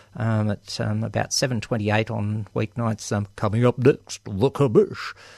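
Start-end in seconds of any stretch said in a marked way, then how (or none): 3.4-5.2 put-on TV announcer voice. Announcing what's coming up next: Pete Smith announcer voice. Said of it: "I always have to say that in a Pete Smith voice".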